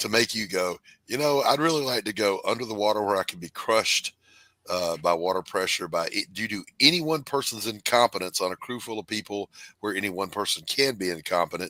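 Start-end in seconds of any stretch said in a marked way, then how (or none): none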